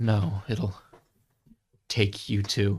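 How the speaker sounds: low, quiet voice. In a role-play, a character locks eyes with Supremus, muttering quietly. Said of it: "in a low voice ... loud enough for him to hear, but still quiet".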